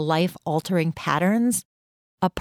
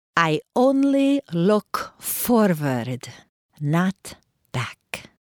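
put-on speaking with Hungarian accent. Retelling what a woman answered a man about his move: Hungarian accent. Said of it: "she said in her Hungarian accent".

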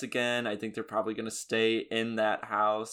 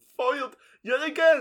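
cartoon bear voice, much higher and louder; 6 dB louder than usual. After being interrupted again, the speaker exclaims in a Yogi voice. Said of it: "I don't know why I'm speaking like Yogi".

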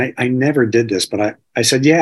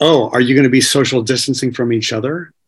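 mock taunting, sarcastic, mocking delivery. Retelling the guru's reply-all email to the community: imitating a mocking tone. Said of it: "it was this constant mocking tone".

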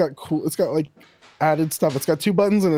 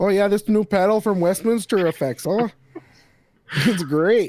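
terrible put-on Newfoundland accent; 4 semitones higher than usual. Pitching an effects pedal for a mock demo video, in a terrible newfoundland accent impression. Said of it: "Diaz is doing a terrible impression".

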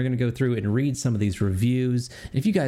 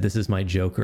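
ordinary delivery

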